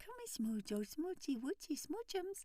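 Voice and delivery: put-on very high, cooing, swooping baby-talk voice. Showing the different tone people use with cats: cooing baby talk. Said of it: "you go into a different tone. Like at the beginning of this".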